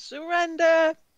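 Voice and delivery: very high, very loud shrieking scream. Calling over her shoulder during a fight: screaming. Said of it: "she screams".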